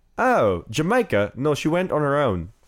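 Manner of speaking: put-on, sing-song English accent. Telling a joke about two men talking, voicing their exchange; English accent. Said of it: "You do have to say it in an English accent".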